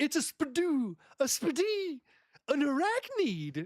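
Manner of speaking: very high, swooping, drawn-out scared voice. Retelling a cartoon scene where the cat sees a spider: Tiger's wacky scared voice. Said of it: "he's got that wacky ass voice".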